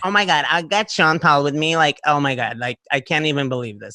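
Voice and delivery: mock ditzy American girl voice.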